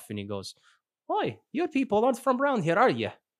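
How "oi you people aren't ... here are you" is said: very high, swooping fake Scottish accent drifting Russian. Game master voices a character greeting a group of strangers; attempted scottish accent. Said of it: "that's Russian".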